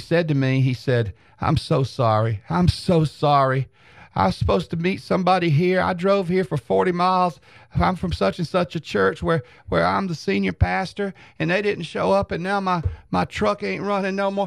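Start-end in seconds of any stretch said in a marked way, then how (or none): 1.4-14.5 put-on tearful crying old man voice, higher. Retelling an old man's tearful plea for help: imitating an old man crying. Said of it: "and he was crying".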